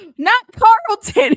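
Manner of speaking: high, loud, slow, drawn-out shocked disbelief. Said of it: "I was like".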